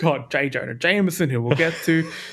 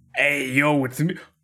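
weird New York construction worker voice; 2 semitones lower than usual. Slipping into a made-up character: weird grown-up Milhouse voice. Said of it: "I didn't mean for that character to come out".

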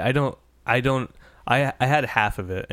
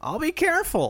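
very high-pitched complaining whine. Giving a quiz hint by acting out a Star Wars line: mock-whiny Luke impression. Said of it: "think of him saying it like whiny".

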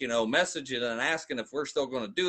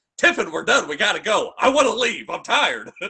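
voice raised loud and high, short of yelling; 8 semitones higher, 9 dB louder than usual. Retelling finally telling a companion at the door it's time to go: retelling a raised voice. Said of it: "I kind of like raised my voice and I was like".

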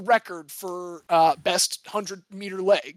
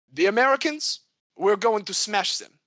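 rough, clumsy put-on French accent; 3 semitones higher than usual. Trying a line in an accent after explaining merde, french accent. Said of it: "I'm going to try and do this in an accent".

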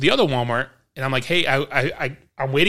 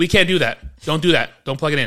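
mock-yelling, put-on shouting; 2 semitones higher than usual. Retelling how a guy at Walmart yelled from the gate, retelling a yell. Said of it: "he yells from the gate".

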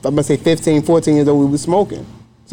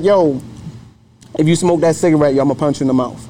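ordinary talk

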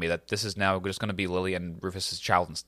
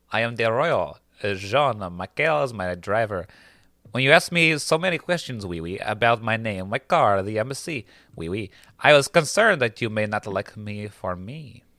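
alluring, sexy put-on French accent. Explaining his caution, a Frenchman reveals he is the royal: sexy French accent. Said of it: "that is such a sexy accent".

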